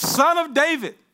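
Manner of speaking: put-on loud, high-pitched pleading cry. Voicing a blind man crying out to Jesus: loud cry. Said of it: "sorry, got a little loud".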